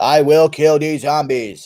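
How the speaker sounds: slow, deliberate, steady voice, words drawn out. Answering a chat request for a JFK impression: JFK impression. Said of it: "That's what he sounds like".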